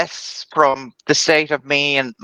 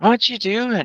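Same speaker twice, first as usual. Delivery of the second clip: groggy, drowsy, pitched-up, half-awake voice; 8 semitones higher than usual. In a role-play, a character woken by someone panicking asks: groggy, just woken up. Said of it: "very groggily kind of say".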